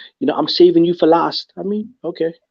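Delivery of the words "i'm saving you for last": plain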